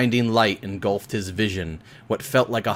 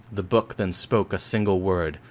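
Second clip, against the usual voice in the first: usual speaking voice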